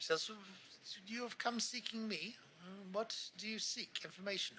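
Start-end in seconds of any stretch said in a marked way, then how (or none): 1.1-4.6 courteous, polite, gracious, lightly pitched-up delivery. Game master voicing a halfling wizard greeting the party: polite and gracious. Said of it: "gives a very polite uh, and uh, gracious smile".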